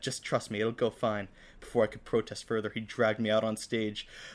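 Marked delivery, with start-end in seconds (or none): none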